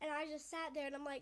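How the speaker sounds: ordinary delivery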